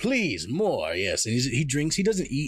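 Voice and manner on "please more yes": giddy, delighted, merry voice with laughing. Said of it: "he starts laughing and smiling more".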